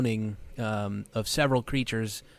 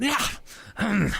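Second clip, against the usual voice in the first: sounding angry, higher; 11 semitones higher than usual. Voicing an unseen creature the players hear: angry voice. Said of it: "sort of like, uh, an angry".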